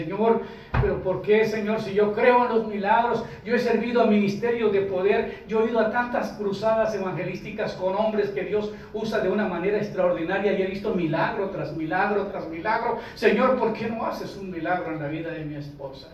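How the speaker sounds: plain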